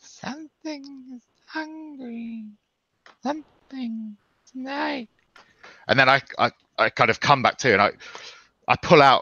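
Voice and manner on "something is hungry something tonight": hushed, very high, slow, ghostly disembodied voice. Speaker retelling a strange voice that was not Void's, very high, disembodied voice. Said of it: "three octaves higher and like kind of disembodied".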